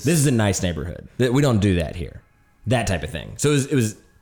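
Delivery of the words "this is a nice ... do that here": normal talking voice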